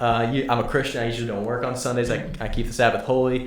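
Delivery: ordinary talk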